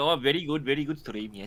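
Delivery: put-on strong Indian accent, gushing and full of praise. Imitating a streamer signing off in real life: imitating Mandy in a deep Indian accent. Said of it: "a really deep, like, um, like, Indian accent".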